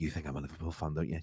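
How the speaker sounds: soft half-whisper, under the breath. Retelling a reply to a woman at a train buffet counter: imitating own past half-whisper. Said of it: "I started whispering as well".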